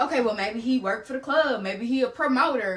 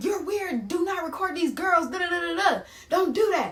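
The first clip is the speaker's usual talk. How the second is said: mock heated telling-off, pitched up, full rant; 5 semitones higher than usual. Retelling yelling at a man for recording girls: imitating own yelling. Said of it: "I'm yelling at this man".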